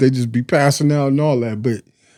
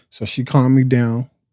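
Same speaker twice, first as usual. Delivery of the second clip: plain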